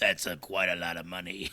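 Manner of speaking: low, dropped-down character voice. Riffing on a film's box office take, as Palpatine would say. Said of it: "as Palpatine would say".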